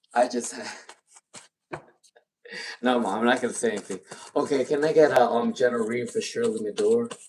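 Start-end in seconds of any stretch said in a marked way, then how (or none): 0.2-4.0 half-laughing, giggly words spoken through laughter. Giving a tarot reading for a viewer, laughing while talking. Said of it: "I'm laughing right now".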